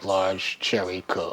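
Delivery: low, slow, dreamy craving inner murmur.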